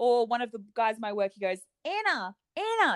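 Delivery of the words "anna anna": put-on high-pitched, called-out Kiwi accent. Imitating how a guy at work says your name, in a Kiwi-sounding accent. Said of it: "That's what he sounds like".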